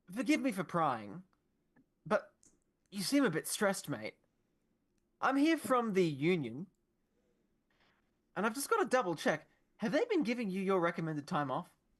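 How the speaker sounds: feigned calm, breezy, confident and unbothered tone. In character, questioning a devil who just attacked someone: acting confident and unbothered. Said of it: "I'm pretending like I'm not freaked out by this at all".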